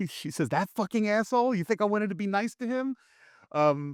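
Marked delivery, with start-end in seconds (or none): 0.5-2.9 play-acted, very high, angry, heated yelling. Retelling how the sister yelled at her father: imitating someone yelling. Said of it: "even yells at him".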